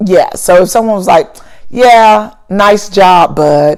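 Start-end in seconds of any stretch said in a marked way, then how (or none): 1.7-3.8 slow, drawn-out, insincere sarcasm. Speaker demonstrating a compliment someone might give without meaning it, sarcastic. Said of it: "the other one is sarcasm".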